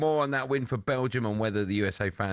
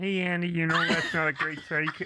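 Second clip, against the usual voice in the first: high, pitched-up puppet-style cartoon frog voice; 5 semitones higher than usual. Imitating a mate reacting to a bad take: Kermit-like Greg Rusedski impression. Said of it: "Why do you sound like Kermit?".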